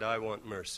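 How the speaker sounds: soft hushed voice. Retelling a reply to a host who demanded justice, spoken quietly.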